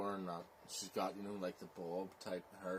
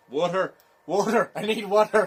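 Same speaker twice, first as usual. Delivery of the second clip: put-on Irish accent, very high and very loud; 12 semitones higher, 22 dB louder than usual. Acting out how a man calls for water, switching into an Irish accent. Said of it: "You went normal to Irish to Belfast".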